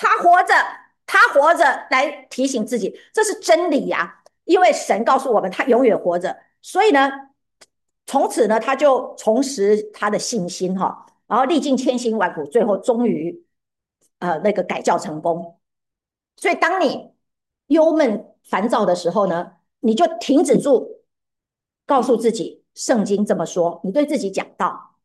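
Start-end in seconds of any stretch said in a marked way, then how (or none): 0.0-1.6 loud, high-pitched proclaiming voice. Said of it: "他就大声的念".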